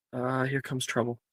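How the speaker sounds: soft, hushed, half-whispered aside. Voicing a character who looks over during a class: half-whispering. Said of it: "Logan looks over and whispers".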